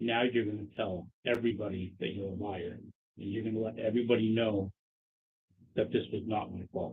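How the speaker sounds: barely audible, hushed, very quiet half-whisper. Speaking in character to another character: half-whispering. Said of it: "I just whispered, I'm like".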